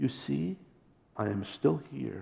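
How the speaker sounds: tender, infinitely gentle, soft half-whisper. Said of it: "whispered with infinite gentleness".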